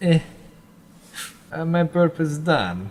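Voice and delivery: slow, high, drawled put-on Eastern European accent. As it is fading away, your voice is heard one last time, in a Borat voice. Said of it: "Why does you sound like that?".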